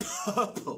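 very high, startled, shocked laughing cry. Reading a story aloud, a character reacts to another's news with a shocked laugh. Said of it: "Said Joe with a shocked laugh".

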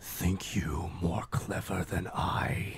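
lurking, ominous voice, very slow and drawn out. Voicing an unseen presence taunting a player: voice from the shadows. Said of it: "you hear a voice from the shadows go".

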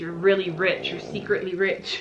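normal talking voice

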